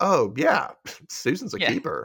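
mock nonchalant tone. Recapping an episode, acting out Patrick's reply to Steve, mock-nonchalant Patrick. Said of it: "Patrick nonchalantly says".

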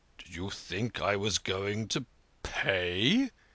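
with a gasp. In a story, Manasseh answers the Pole's reminder about the Sabbath, gasping. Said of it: "he gasped".

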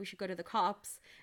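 ordinary talk

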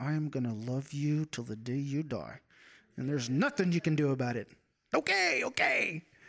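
play-acted, joking, sarcastic, swooping comic voice. Imagining God telling people he will love them forever: imitating God, sarcastic and funny. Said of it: "in a sarcastic, kind of funny way".

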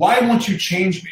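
acted, restrained scream, only hinted at. Recounting hearing screams and breaking down, the speaker is retelling a scream at God. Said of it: "like screaming at God".

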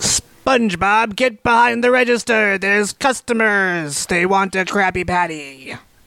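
cartoon crab character voice. [name], asked to do his Mr. Krabs after another impression, gives a Mr. Krabs impression. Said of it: "now let's hear your Mr. Krabs".

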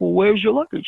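put-on Israeli-accented speech. Retelling a trunk search, the speaker quotes the man questioning him: put-on Israeli accent. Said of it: "in his Israeli accent".

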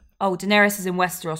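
normal talking voice

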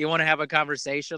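ordinary talk

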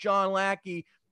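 high-pitched, screaming, taunting. Retelling how a stranger kept screaming his name after him: retelling a scream. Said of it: "he's screaming and he's like".

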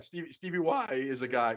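slow speech with voice cracking mid-word. Correcting a nickname for another speaker: voice cracking. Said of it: "voice crack".

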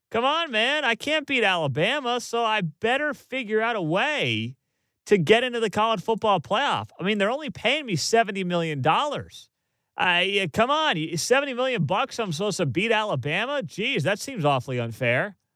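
openly sarcastic, high complaining lament. Speaking as Jimbo Fisher to mock him, sarcastically mocking Jimbo Fisher. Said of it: "I hope you sense my sarcasm".

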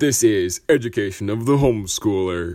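very loud, big show-intro announcer voice. Speaker offers to do the announcer voice for education of the homeschooler. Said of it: "I can do the announcer voice".

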